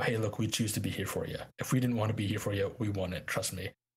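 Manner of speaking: imitated sharp, snapping tone. Retelling a friend's reply to repeated apologies: imitating a friend snapping. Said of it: "snap at me and go".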